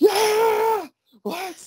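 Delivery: obnoxious, loud yelling. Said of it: "obnoxious, like, fans, like, going".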